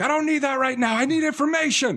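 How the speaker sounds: mock, very high, shrill screaming. Retelling a woman's reply to sympathy about her dad, retelling a scream. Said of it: "she's screaming at him".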